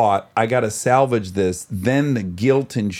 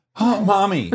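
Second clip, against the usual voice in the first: very high sexual moan; 9 semitones higher than usual. Asking how a word was said, acting one version: imitating a sexual moan. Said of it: "like, sexual?".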